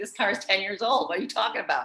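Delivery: ordinary delivery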